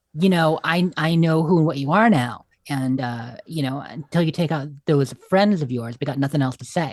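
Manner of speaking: plain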